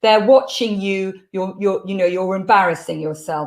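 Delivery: ordinary delivery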